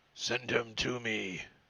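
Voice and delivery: deep, heavy voice. Game master voicing an unseen speaker the players hear, deeper, heavier voice. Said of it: "you hear a deeper, uh, heavier voice".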